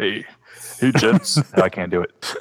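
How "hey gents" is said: put-on, really low-pitched voice. Standing in for Dan by pretending to be him: low-voiced Dan impression. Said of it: "You got to have a really low voice".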